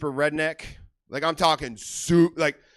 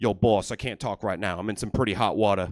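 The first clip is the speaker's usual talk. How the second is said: very deep, tough-guy gangster voice; 8 semitones lower than usual. Impression of a mobster in a bubble bath taking his boss's call, mobster voice. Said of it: "impression is of a mobster taking a bubble bath".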